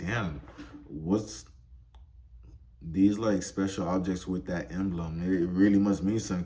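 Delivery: ordinary delivery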